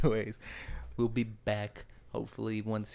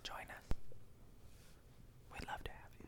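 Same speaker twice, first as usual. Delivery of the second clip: very quiet, soft, breathy whisper. Inviting listeners to join at the end of the episode: whispering. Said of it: "Quit whispering".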